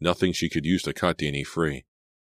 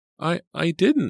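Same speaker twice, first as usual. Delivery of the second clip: stammering, much higher, louder; 14 semitones higher, 4 dB louder than usual. Narrator voicing a woman answering a tied-up man's question: stammering. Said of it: "Selina stammered".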